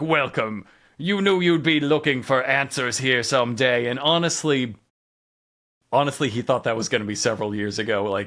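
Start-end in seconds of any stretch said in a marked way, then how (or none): 0.0-3.9 disguised, modulated voice-changer villain voice. Retelling a masked figure's video greeting: imitating a voice-modulated villain. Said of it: "the full voice modulation".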